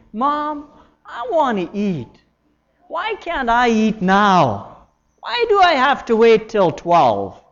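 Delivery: loud, nagging, complaining whine with swooping pitch. Speaker illustrates asking without thanksgiving, whining to mom. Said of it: "it could sound like you're whining".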